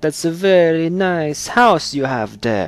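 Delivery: Transylvanian-sounding accent. Trying a mob extortion line, Transylvanian-sounding accent. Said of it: "That was not Italian. That was more Transylvanian".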